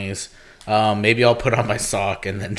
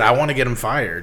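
normal talking voice

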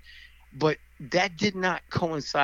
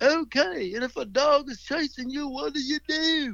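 very high-pitched put-on southern accent; 11 semitones higher than usual. Quoting a karate teacher questioning the kids, in a southern accent impression. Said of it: "Because he had a southern accent".

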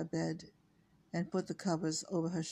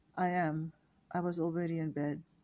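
ordinary delivery, nothing marked

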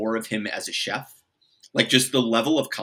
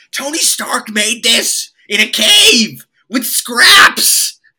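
shrill, booming, very slow, drawn-out furious scream; 13 semitones higher, 13 dB louder than usual. Retelling the Iron Man scene where Jeff Bridges' character yells at his scientists: imitating Jeff Bridges screaming. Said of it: "he just starts screaming".

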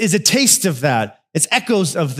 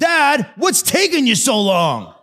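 put-on high-pitched, impatient yelling in a kid voice. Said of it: "he will yell".

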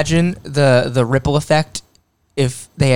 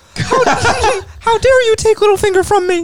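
squeaky cartoon voice, much higher. Recapping a show, voicing a character's line in a Mickey Mouse voice. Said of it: "is just Mickey Mouse".

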